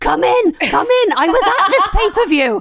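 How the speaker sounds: shrill, loud, excited, very high shout. Imagining shouting at nurses in the home, pretend shouting. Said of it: "shouting at our nurses".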